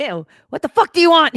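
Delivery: very high, very loud, shrill, rude Philadelphia accent. Mocking a phone menu, the press-2 option answers a caller in a rude philly accent. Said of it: "Or they press 2 and get like Philly".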